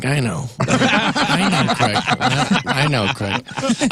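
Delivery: weary, slow, laughing, dismissive delivery.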